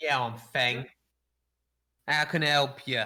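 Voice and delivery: little goblin voice. Voicing a goblin forge master greeting a player: voicing a goblin. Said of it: "a little goblin appears".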